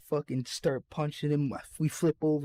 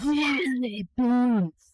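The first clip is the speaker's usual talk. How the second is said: very high-pitched, loud, confrontational voice; 9 semitones higher, 6 dB louder than usual. Retelling how a big dude walked in on a fight: imitating Mister Sanchez's drug ass voice. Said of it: "Drug ass voice".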